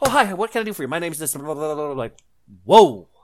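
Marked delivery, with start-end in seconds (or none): 0.0-1.9 hyper, high-energy, spazzing, bouncing-off-walls delivery. Showing ways to do voices, the speaker demonstrates a hyper, spazzing energetic person. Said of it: "a high energetic person who's like spazzing".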